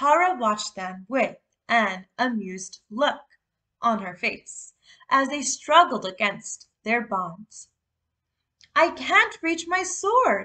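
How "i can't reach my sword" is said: high, gasped-out words. Jake, tied to a column and struggling against his bonds, speaks gasping. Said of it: "Jake gasped".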